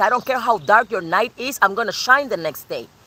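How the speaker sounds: ordinary delivery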